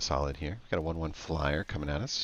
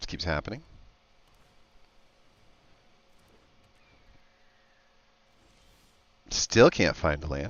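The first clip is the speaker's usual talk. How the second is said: exasperated, fed-up, raised frustrated voice; 6 dB louder than usual. Still failing to find a land after repeated tries, frustrated. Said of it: "hear the frustration in my voice".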